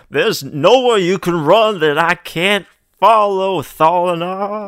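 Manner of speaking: very loud, high holler, calling out. Game master voicing the professor calling after a fleeing player, hollering. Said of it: "the professor hollers after you".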